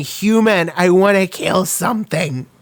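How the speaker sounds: mild acted-out yell in a wild character voice. Describing an anime character who only screams: imitating Power screaming. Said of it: "screaming and going".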